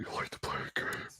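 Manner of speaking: creepy, hushed horror-villain whisper. Asked by a viewer in the chat to do the voice again: requested put-on voice. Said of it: "Carrie wants me to do the voice again".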